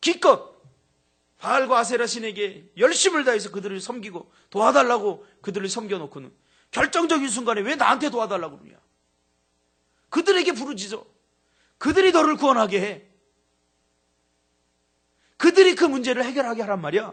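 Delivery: loud, high-pitched, angry, rebuking tone.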